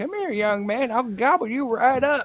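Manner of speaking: put-on shrill, very high old woman voice. Talking about old ladies who approach him, imitating an old lady. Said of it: "the old ladies that are like".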